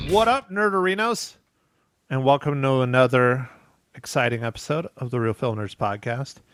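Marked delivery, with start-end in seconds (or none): 2.1-6.4 level, flat, deadpan monotone. A podcast host welcomes listeners to another episode in a monotone. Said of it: "I said exciting and monotone".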